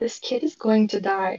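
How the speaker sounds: in-character whisper. Whispering in another character's ear during a tabletop game: in-character whisper. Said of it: "just whisper in his ear".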